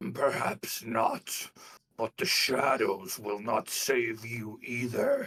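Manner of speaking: guttural, throaty delivery from the throat. Voicing an attacker turning to a player, in a guttural voice. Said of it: "in like kind of a guttural voice".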